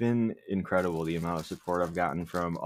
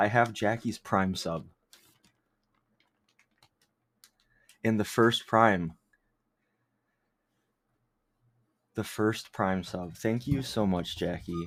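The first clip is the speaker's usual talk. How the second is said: out of breath, faster. Thanking Jackie for the first Prime sub, out of breath. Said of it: "I'm like out of breath".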